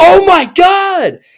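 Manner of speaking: high, loud, drawn-out scream. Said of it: "I scream out loud".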